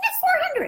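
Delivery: squeaky, very high-pitched. Showing how a seller's voice changes when saying the price, high squeaky voice. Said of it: "they get the really high squeaky voice".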